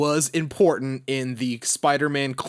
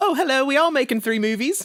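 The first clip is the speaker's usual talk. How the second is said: put-on British accent, pitched way up; 12 semitones higher than usual. Imitating an actor announcing three movies: British accent imitating Tom Holland. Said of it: "That's my British".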